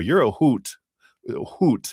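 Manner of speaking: put-on slow, high, drawn-out Wisconsin accent. Thanking a chat viewer, quoting how Wisconsin relatives say it, Wisconsin accent. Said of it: "they would say it with a Wisconsin accent".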